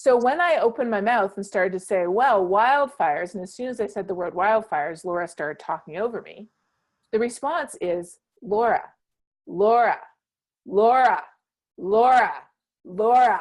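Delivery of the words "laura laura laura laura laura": even, slow, steady tone, swelling in volume, repeating. Demonstrating how to repeat someone's name until they stop talking over you: even tone, growing louder. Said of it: "in an even tone, but louder and louder".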